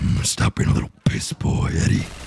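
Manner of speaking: meme-style rough, creaky, raspy voice. Showing the voice once used while playing Rivals: memey Venom voice. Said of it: "the Venom voice".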